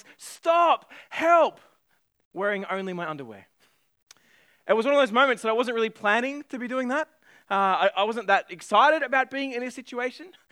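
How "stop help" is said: loud, high-pitched screaming. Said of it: "screaming at the top of my lungs".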